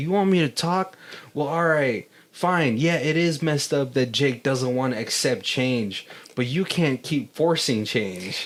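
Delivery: ordinary talk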